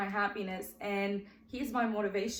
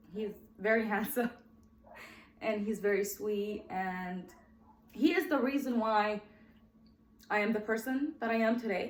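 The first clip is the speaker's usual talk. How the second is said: choked-up, halting voice, words breaking apart. On a first episode, describing someone very dear, getting emotional. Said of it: "I'm getting emotional on my first episode".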